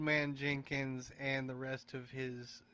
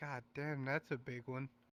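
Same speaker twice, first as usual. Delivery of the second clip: character voice, muttered and quieter; 4 dB quieter than usual. Game master voicing Murphy as he sees the player approach, Murphy muttering under his breath. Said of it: "you kind of hear under his breath".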